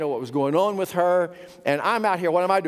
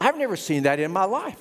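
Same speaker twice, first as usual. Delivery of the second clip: ordinary delivery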